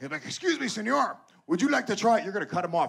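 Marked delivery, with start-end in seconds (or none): 0.2-2.2 shady dealer voice, high and creaky pitch. Retelling how a shady guy on the beach offers a sample: imitating a shady beach dealer. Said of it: "another shady-looking Mexican guy's gonna come up to you".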